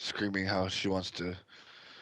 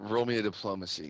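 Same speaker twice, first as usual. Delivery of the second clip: usual speaking voice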